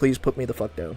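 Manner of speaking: put-on irritated, fed-up pig voice. Voicing the pig once it finishes its carrot: put-on annoyed pig voice. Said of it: "She will be like".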